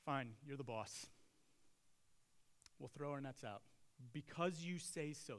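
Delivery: acted, grudgingly resigned tone. A speaker acting out Peter's reply, mock-resigned and grudging. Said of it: "There's some resignation in Peter's voice".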